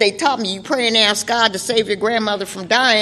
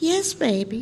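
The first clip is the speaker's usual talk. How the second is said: soft, cooing vintage cartoon character voice; 3 semitones higher, 7 dB quieter than usual. Retelling her answer to your question about alcoholics, do her Betty Boop voice. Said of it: "in her Betty Boop voice".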